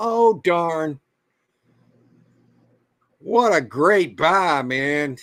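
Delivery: sarcastic. Commenting on fees eating into a small resale profit, sarcastic.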